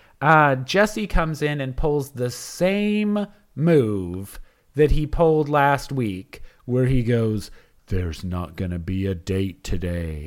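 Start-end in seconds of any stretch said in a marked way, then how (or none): 7.9-10.3 heavy, grave, somber tone. Retelling how Jesse announced there would be no date: imitating Jesse's somber tone. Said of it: "in, like, a really somber tone, like someone has died".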